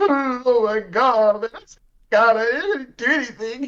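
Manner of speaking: put-on sobbing, very high and very slow. Retelling a tased man's plea to an officer: imitating a man crying. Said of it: "he starts crying, and he's like".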